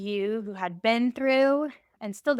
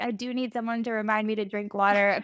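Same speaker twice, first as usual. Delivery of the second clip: acted, mock bawling. Recounting own reaction to a phrase, retelling own bawling. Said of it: "I just was started bawling".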